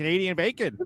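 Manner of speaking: acted nasally voice. Imitating a coworker who asks passersby in the cafeteria: Billy Joe impression. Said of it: "that's a really good Billy Joe impression".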